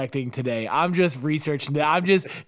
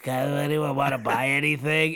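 put-on hungover voice, hoarse and weak; 2 semitones lower, 3 dB quieter than usual. Acting out a sales call made while hungover: imitating a hungover lost voice. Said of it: "sound like".

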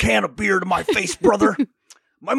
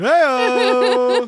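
loud, bellowed, cheesy costume wrestler voice; 4 semitones higher, 3 dB louder than usual. Calling out a catchphrase: Hacksaw Jim Duggan shout. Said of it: "a really shitty hacksaw Jim Duggan".

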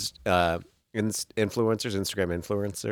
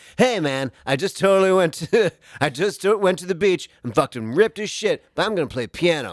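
put-on weird affected dude voice, much higher, louder; 8 semitones higher, 4 dB louder than usual. Mocking guys who post gym videos, imitating a weird affected voice. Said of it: "They all have like this weird like affected".

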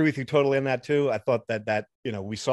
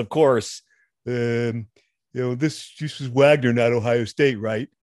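put-on dumb fan voice, slower; 4 dB louder than usual. Podcast host reading a listener's first email aloud in a dumb fan voice. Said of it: "You like my dumb fan voice".

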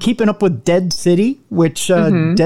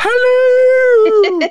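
hello stretched out, very high and lingering. Saying hello after being told it sounds like Mrs. Doubtfire: Mrs. Doubtfire voice. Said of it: "Missus Doubtfire-ish".

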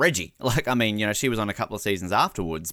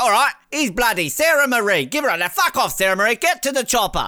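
teasing, dismissive tone, pitched up; 13 semitones higher, 6 dB louder than usual. Retelling how Dicko hurries people off after a hug: imitating Dicko. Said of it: "He's like".

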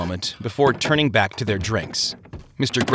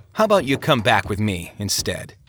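plain reading voice

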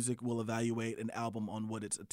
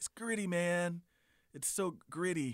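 put-on seventies beatnik voice, slow, pitched-up drawl; 7 semitones higher than usual. Mocking a music review's style: imitating a seventies beatnik. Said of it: "I'm sounding like a seventies beatnik".

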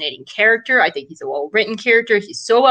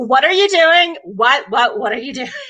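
sassy, laid-on-thick delivery; 4 semitones higher than usual.

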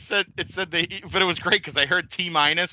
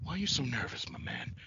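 breathy, hushed, barely voiced near-whisper; 13 dB quieter than usual. Quoting the wrestler talking to a game show host: Jake Roberts impression. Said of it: "That's from WrestleMania seven when he's talking".

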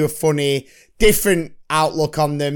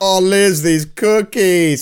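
slow, teasing, taunting, drawn-out drawl; 3 semitones higher, 4 dB louder than usual. Retelling the neighbour teasing on the phone: Ted taunting impression. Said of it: "he's going like".

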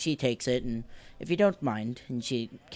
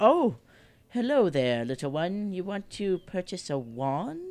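put-on older lady voice; 3 semitones higher than usual. Narrating a game scene, voicing a woman offering the player a wand: older lady voice. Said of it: "She's an older lady".

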